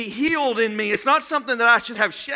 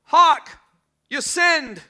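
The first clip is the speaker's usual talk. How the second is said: put-on British English accent; 4 semitones higher, 3 dB louder than usual. Imagining some guy remarking on a missed bullseye, put-on english accent. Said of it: "some guy in the English voice would be over there going".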